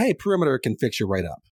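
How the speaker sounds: plain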